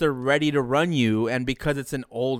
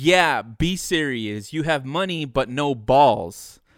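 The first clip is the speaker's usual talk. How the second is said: plain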